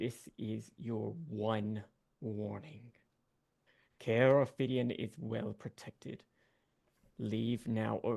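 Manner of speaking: loud booming voice. Voicing a guardian who warns the party to leave: loud booming voice. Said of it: "You hear just a loud, booming voice".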